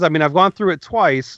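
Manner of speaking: ordinary talk, nothing marked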